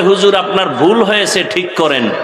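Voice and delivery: ordinary talk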